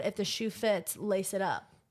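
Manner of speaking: ordinary talk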